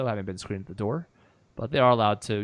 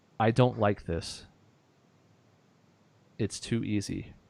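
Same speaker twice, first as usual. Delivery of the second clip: secretive, confiding stage whisper. Narrating a scene to a player, the speaker voices a character's words, whispering. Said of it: "what the Empress whispers to Cass is".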